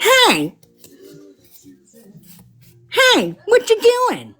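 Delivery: very high, cranky, drawled, swooping puppet voice. Speaker recalls a puppet who always came down annoyed, mock-grumpy Randy puppet voice. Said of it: "Randy was always pissed off at something".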